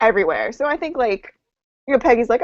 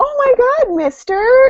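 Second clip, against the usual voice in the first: put-on creepy good-girl voice, very high; 4 dB louder than usual. Imitating a character's creepy good girl voice while discussing a fight scene. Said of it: "Dottie's, like, good girl voice is so creepy".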